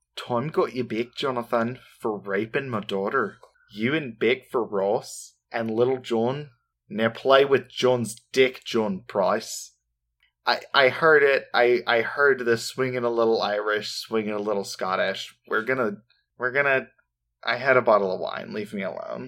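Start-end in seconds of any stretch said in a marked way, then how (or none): 0.1-9.7 put-on, attempted Australian accent. Reading out a handwritten note asked for in an Australian accent: Australian accent. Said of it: "do I also need to do the Australian accent for this one".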